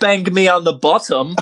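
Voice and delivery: mock British accent. In a scene naming a made-up bird lizard breed, in a mock British accent. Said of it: "You went British with it".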